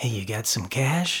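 shady, hushed half-whisper, close and quiet. Acting out a stranger at a urinal offering a tip: acted half-whisper. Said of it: "whispers in your ear".

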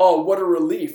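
sarcastic delivery. Recounting a man explaining the blue check mark; retelling a sarcastic reply. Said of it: "Like sarcastic".

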